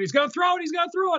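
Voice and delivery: shrill, very high, acted-out screaming. Retelling how opposing parents reacted: imitating parents screaming. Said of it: "Then they're all screaming".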